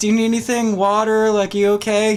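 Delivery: sugary, super sweet, high lady's voice. Retelling how a lady at the door answered a drunk man, imitating a super sweet lady. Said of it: "super sweet sounding lady".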